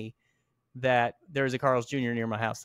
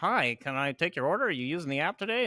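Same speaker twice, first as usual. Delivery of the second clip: put-on robotic automated voice, higher; 4 semitones higher than usual. Describing AI ordering boxes at fast food restaurants, the speaker is imitating a robotic order voice. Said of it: "like a robot goes".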